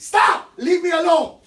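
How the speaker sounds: shrill, full-volume, high, drawn-out scream. Showing students how to stand up to a bully: screaming. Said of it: "and you scream".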